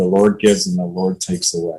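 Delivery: ordinary talk, nothing marked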